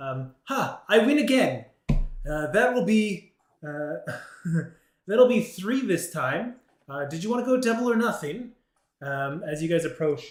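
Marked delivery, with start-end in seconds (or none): 0.4-8.5 put-on smug, gloating satyr voice, high and loud. Game master voicing a satyr who jumps up from her chair, satyr character voice. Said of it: "I need a better voice for that".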